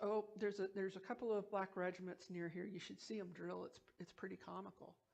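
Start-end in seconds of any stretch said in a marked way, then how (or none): none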